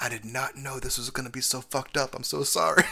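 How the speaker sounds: confiding, voiced stage whisper. Retelling what a man near the speaker told a woman: imitating a man half-whispering. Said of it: "he whispered to her".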